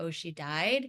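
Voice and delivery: mock offhand, level, matter-of-fact delivery. Speaker recalls asking mom where Gugu was, imitating mom's matter-of-fact tone. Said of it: "Just pretty matter of factly".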